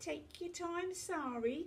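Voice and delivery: very high, drawn-out, needling teasing tone. Narrator reads two girls repeating the teacher's words to a classmate, teasing. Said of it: "teased Charmaine and Carmen".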